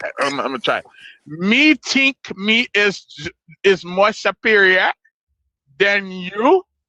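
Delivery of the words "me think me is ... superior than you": slow, fake Jamaican accent, laid on thick. Trying to say a line in a put-on jamaican accent. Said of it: "Let me speak it in Jamaican".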